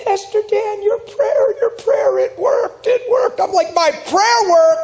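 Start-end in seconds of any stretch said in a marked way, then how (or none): 0.0-3.4 high, squeaky, weepy, tearful cry. Retelling a woman's phone machine message: high-pitched squeaky crying voice. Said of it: "Real high-pitched, squeaky voice crying".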